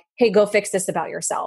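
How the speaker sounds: usual speaking voice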